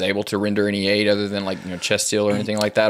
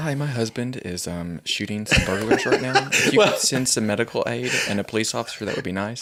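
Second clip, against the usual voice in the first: put-on, cool as a cucumber, eerily composed, unbothered; 2 semitones higher than usual. Joking about the wife's nine one one call: imitating someone cool as a cucumber. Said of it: "she's just cool as a cucumber".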